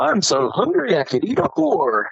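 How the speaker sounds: high, swooping sing-song voice. Quoting a line from a film, Frosty the Snowman voice. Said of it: "you hear it in Frosty's voice".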